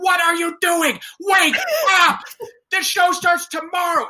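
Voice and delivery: very high, furious screaming fit. Retelling how she screamed at the chorus in the gym: retelling a screaming fit. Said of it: "she just started screaming at us".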